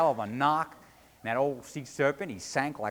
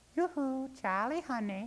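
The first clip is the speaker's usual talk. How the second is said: very high, clear, sweet, soft, tinkly little voice; 12 semitones higher, 5 dB quieter than usual. A narrator reads a voice calling out to Charlie, in a sweet tinkly little voice. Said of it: "that same sweet voice says".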